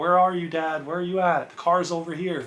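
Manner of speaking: mild, low-key, easy calling out. Retelling calling for dad across a parking lot: retelling own yelling. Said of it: "yelling in the parking lot".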